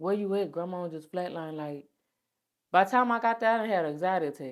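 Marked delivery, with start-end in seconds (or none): none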